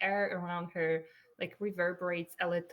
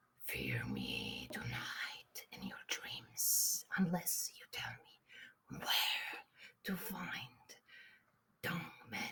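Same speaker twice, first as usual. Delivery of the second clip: hushed, breathy, mischievous close whisper; 8 dB quieter than usual. A player's character leans over to a baker, mischievous whisper in his ear. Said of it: "planning on making mischief to whisper in his ear".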